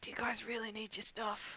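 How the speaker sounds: whispering under breath. A character whispers under their breath to Blaine, whispering under breath. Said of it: "I'll whisper under my breath".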